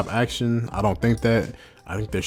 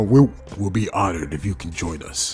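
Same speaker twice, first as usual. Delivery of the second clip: put-on sarcastic villain voice; 3 semitones lower than usual. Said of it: "in a sarcastic way".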